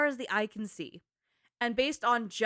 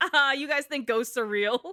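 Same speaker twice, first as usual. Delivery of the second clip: loud, laughing through the words; 3 semitones higher, 5 dB louder than usual. Recapping a game scene where Nate scares Chloe and Sully, imitating Nate laughing mid-sentence. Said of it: "Nate starts laughing his happy little ass off".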